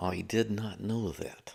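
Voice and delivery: slow, dry, deadpan drawn-out talk-show host delivery. Reacting to a fact with a Dana Carvey impression of Johnny Carson. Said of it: "my Dana Carvey impression of Johnny Carson".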